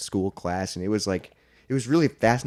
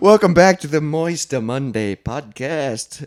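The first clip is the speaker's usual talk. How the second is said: very loud, belted put-on Italian accent; 6 semitones higher, 8 dB louder than usual. Podcast host opening the episode, mock Italian accent. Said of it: "you were doing like the Mamma Mia accent".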